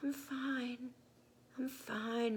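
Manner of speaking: tiny voice, very slow, finely stretched murmur. Carried on Aki's back after being buried in sand, Khan answers in a tiny murmuring voice. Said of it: "murmured Khan in the same tiny voice".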